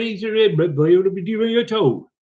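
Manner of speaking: Devon accent. Imitating how their brother from Devon talks: Devon accent. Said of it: "he'd be talking like this because he's from Devon".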